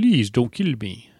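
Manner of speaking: bad put-on French accent. Imagining another version of the Slink character, in a bad French accent. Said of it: "One with a bad French accent. ... It was more Romanian".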